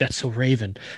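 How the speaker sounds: hushed half-whisper under the breath. Voicing a character seeing crows take flight: half-whisper under his breath. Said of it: "Calvin's gonna whisper underneath his breath".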